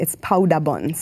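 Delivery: "powder buns" said with Belizean pronunciation. Showing how the food's name is said: Belizean pronunciation. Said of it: "if you wanna say it Belizean".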